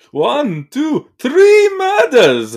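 very high, very slow sing-song cadence. Counting a character's kills after the Count from Sesame Street is mentioned: Count from Sesame Street voice. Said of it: "the count from, like, Sesame Street".

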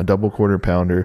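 ordinary talk

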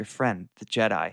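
hushed, secretive half-whispered aside. Retelling a film scene where a character pulls her aside: imitating Mon Mothma's half-whisper. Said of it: "she kinda whispers".

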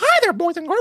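very high, loud, squeaky cartoon voice. Comparing cartoon voices, greeting boys and girls in a Mickey Mouse voice. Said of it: "like Mickey Mouse".

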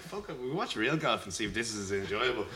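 usual speaking voice

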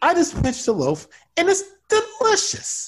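very high, gleeful, swooping sing-song delivery. Coaching how to deliver a line with glee, then showing it: gleeful line delivery. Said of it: "You see how I did it?".

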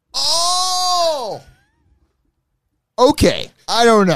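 very high, very slow, drawn-out, stretched delivery. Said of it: "he's gonna get so mad at me for that impression".

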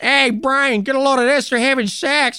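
very high, goofy cartoon voice. Joking about a god who shows up and talks to people, in a goofy Peter Griffin voice. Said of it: "it's like Peter Griffin".

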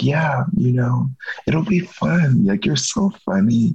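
slow, whispery, breathy imitated voice.

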